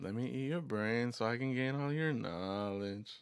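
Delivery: put-on very slow, drawn-out, slurred delivery. Retelling a kid's line about his toys, imitating a kid, slow and slurry. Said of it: "real slow and slurry".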